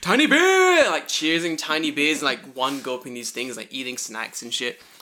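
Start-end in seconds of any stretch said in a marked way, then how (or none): 0.0-0.9 very high, very loud, shrill shriek. Retelling drinking tiny beers with friends: imitating own screaming. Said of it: "We just kept screaming".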